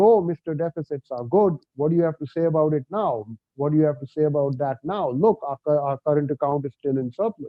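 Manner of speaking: usual speaking voice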